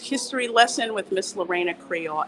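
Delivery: normal talking voice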